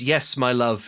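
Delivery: put-on British accent. Retelling a film scene where a ghost answers her lover: British accent. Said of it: "in a British accent".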